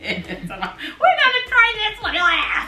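pitched way up, slow, drawn-out mocking voice. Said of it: "snatch out of Talia's hand".

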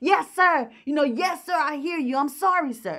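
acted-out yelling with everything in the lungs. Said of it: "yelling at the top of his lungs".

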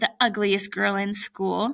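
ordinary talk

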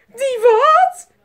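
very high, shrill, very loud shriek. A woman with something in her bed answers a man; screaming. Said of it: "Gilde mevrouw Griezel".

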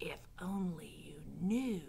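slow, low whisper under the breath. Reading Roscuro responding to Gregory's remark about foolish dreams: whispered. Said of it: "whispered Roscuro".

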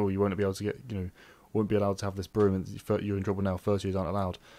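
ordinary delivery

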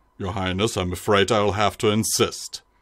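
low-pitched voice. Narrating a tabletop scene, speaking as a towering guard, in a deep voice. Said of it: "saying in a deep voice".

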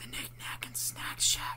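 whispered, soft and breathy. A narrator reads Megan as the scouts listen to footsteps above; whispered. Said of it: "Megan whispered".

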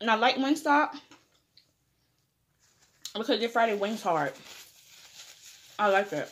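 muffled speech with mouth full of food. Introducing yourself to viewers while eating wings, talking with your mouth full. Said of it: "I'm trying not to talk with my mouth full".

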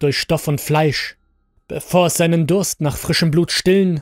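plain reading voice

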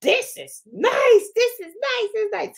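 very high, giddy, swooping sing-song excitement. Describing Lilian's reaction at the end of her video: imitating excited Lilian. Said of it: "she was like floored".

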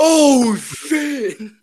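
very high, very loud startled yelp. Retelling being scared by a splash: imitating own startled loud swear. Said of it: "my voice just went like".

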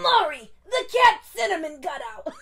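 put-on hoarse yelling voice. Doing a Gilmore Girls impression of Babette: raspy yelling Babette voice. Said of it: "super raspy and just always yelling".

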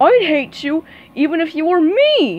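furious, high, loud angry bellowing outburst. Reading a story aloud, voicing Patrick bellowing at SpongeBob in anger. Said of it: "Patrick bellowed, his face twisted in anger".

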